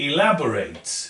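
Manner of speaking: "elaborate" with stress on the first e. Showing learners how to say the word: stress on the e of elaborate. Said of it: "Note the stress is here, E".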